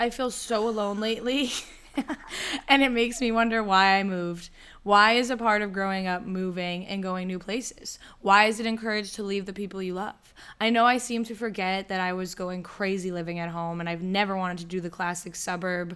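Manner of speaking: ordinary talk, nothing marked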